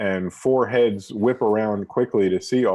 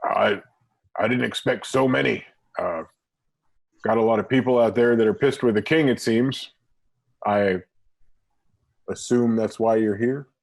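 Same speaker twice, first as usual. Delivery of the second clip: heavily gruff, rough-edged voice. A narrator voices the human speaking to the whole group, in a very gruff voice. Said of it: "says to all of you in a very gruff voice".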